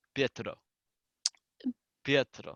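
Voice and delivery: slight Russian accent. Saying a character's name in a slight russian accent. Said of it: "saying Pietro in a kind of slightly Russian accent".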